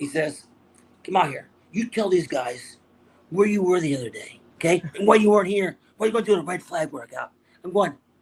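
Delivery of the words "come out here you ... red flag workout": put-on pretend anger. Retelling how Gil called him out at practice, mock-angry scolding. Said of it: "this guy's trying to be mad".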